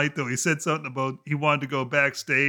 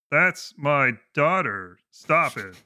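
stiff, monotone delivery. Showing a co-host how the line was really delivered: stilted Al Wilson imitation. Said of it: "You tried a bit more stilted".

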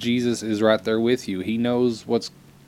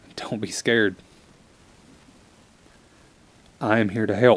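voice catching with emotion. Voicing God's reassurance while getting choked up. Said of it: "I'm getting choked up again".

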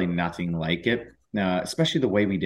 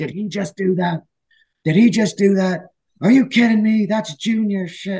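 very high, raised, freaking-out voice; 12 semitones higher, 7 dB louder than usual. Retelling a coach reacting on the bench: imitating a coach freaking out. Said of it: "he's freaking out".

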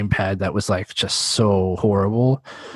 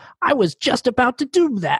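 self-assured, cocky tone. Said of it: "he's like".

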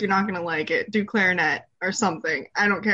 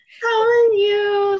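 mock polite customer voice, higher and louder; 12 semitones higher, 6 dB louder than usual. Imitating a friend's customer service voice when greeting someone. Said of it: "her customer service voice".

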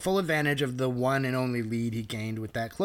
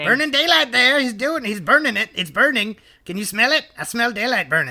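put-on commentator voice, higher and louder; 10 semitones higher, 9 dB louder than usual. Recapping a wrestling match, quoting the commentator: Jim Ross impression. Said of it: "that was a pretty good impersonation".

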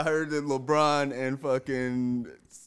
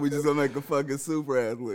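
ordinary talk, nothing marked

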